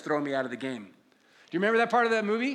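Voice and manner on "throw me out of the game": put-on mutter under the breath, lower pitch. Retelling a movie scene where a coach argues with a referee, under the breath. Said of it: "under his breath".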